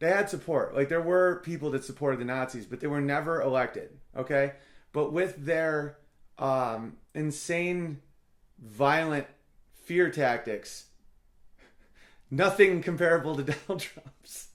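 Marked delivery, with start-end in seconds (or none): 12.3-14.5 speaking through suppressed laughter. Explaining a historical comparison, laughing while talking. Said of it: "sorry for laughing".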